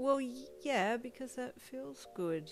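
self-conscious mumbling. Narrating a second-person story, answering his question, mumbled shyly. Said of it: "you mumbled shyly".

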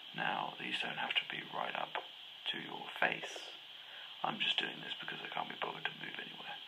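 soft, steady, hushed and unvoiced whisper. Speaker talks to listeners about the setup; whispering. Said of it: "because I'm whispering".

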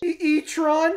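put-on cartoon boy voice with stammering. Answering a request to say a word in Morty's voice. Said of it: "in, like, Morty's voice".

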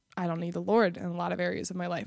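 usual speaking voice

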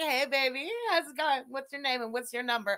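mock seductive tone. Picturing flirting while wearing a Power Ranger suit: put-on flirty voice. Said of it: "flirting with someone wearing a Power Ranger suit".

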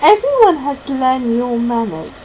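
usual speaking voice

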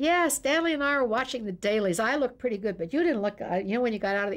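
loud, carrying voice. Retelling what a man announced on coming into the green room truck, loud voice. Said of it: "he'd say in a loud voice".

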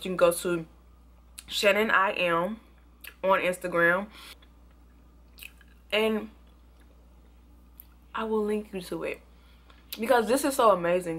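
talking with mouth full of food. Telling viewers where to find the instagram link, talking with a mouth full. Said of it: "for talking with food in my mouth".

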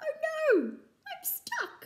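very high, very slow, drawn-out yell. Narrator reads a squirrel hanging stuck in a hole, yelling. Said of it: "the squirrel yelled".

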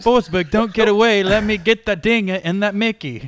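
put-on Irish accent. Retelling what he called out after several beers at the tent, in an Irish accent. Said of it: "That was a really good Irish accent too".

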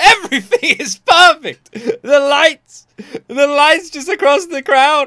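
choked-up, teary awe, very high and loud. Commenting on a concert's lighting, getting teary-eyed. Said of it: "I'm getting teary-eyed".

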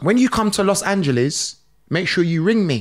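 ordinary delivery

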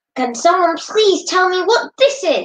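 very high, enraged, roaring furious bellow. Miss Smith storms in through the door, holding a dead mouse: Miss Smith's furious bellow. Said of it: "she bellowed".

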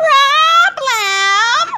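piercing, very high screech. Gritch realizes she has no piggies for her recipe; screeching. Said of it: "screeched Gritch".

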